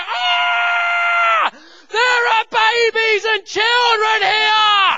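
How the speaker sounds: very loud, slow, high, drawn-out scream. Parent terrified for their children retells suddenly screaming out, retelling a scream. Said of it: "I shout, at first I just scream".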